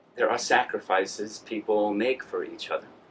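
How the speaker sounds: very low, soft muttering under the breath. Character mutters to themself while another character is talking, muttering. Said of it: "What are you muttering?".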